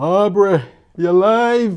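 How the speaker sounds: put-on shrill, booming, loud, high Jamaican-accented shout. Retelling a listener's shout-out on their first broadcast, in a Jamaican accent. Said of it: "in this Jamaican voice".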